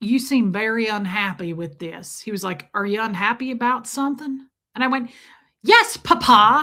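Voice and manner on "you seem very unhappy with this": put-on southern drawl. Speaker retelling what their dad said to them, imitating dad's southern drawl. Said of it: "he's got that southern drawl".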